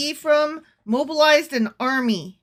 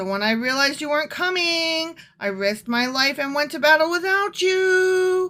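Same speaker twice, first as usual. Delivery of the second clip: high, loud, exasperated complaining voice. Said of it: "he's sounding so exasperated".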